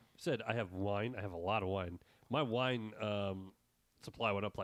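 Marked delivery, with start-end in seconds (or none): none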